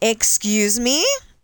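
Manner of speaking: sudden, loud California voice. Recalling a party, the speaker demonstrates their sudden loud california voice. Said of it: "my California voice where you go and suddenly get super loud".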